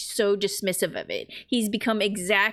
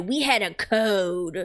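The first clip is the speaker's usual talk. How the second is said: mock lofty, superior, very slow, "code" drawn out. Retelling what Abby said while with Joel: imitating high and mighty Abby. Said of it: "being all, like, high and mighty".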